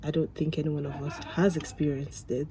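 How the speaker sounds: plain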